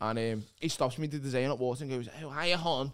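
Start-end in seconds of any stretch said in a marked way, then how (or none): 2.2-2.9 camp, friendly voice. Retelling what a camp friend said when he stopped him: imitating a camp friend. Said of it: "this is like a accurate impression".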